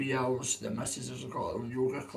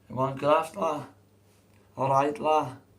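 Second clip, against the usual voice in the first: loud, failed, botched put-on English lad accent; 2 semitones higher, 6 dB louder than usual. His own voice giving out, the speaker retries the line in a failed attempt at lad voice. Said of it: "I can't do it, my voice is fucked".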